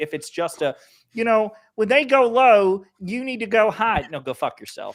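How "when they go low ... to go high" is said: loud, high, derisive scoffing voice. Mocking a phrase about political civility: Jake Tapper impression. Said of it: "my Jake Tapper dipshit impression".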